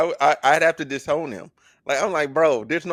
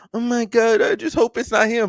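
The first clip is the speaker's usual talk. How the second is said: mock crying, higher pitch; 8 semitones higher than usual. Retelling what she said while crying about him: imitating someone crying. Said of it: "she's over there crying about him".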